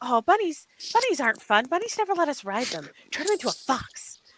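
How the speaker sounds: small, squeaky, high tiny creature voice. Acting out one of two voices heard arguing back and forth: hushed little voice. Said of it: "the other one says".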